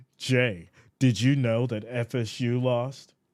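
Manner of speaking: slow, snooty, high-class cat-like drawl. Imitating viewers teasing about the loss: mocking high-class cat voice. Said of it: "You sound like a high-class cat".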